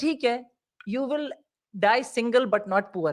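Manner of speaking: ordinary delivery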